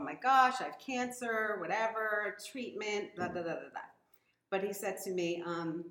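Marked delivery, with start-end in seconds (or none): none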